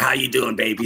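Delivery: teasing send-up, mocking tone. Joking about a caller's greeting, mocking imitation of the caller. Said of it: "She's like".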